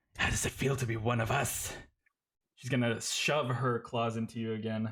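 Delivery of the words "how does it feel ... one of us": hushed whisper, very close and intimate. Narrating a monster attacking the player, whispering in your ear. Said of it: "she whispers into your your ear".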